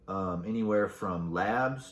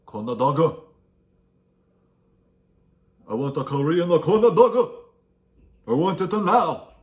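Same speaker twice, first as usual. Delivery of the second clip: put-on Korean accent, very high, shrill and very loud; 9 semitones higher, 11 dB louder than usual. After explaining Korean corn dogs, the speaker demands one: put-on Korean accent. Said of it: "A very good Korean accent".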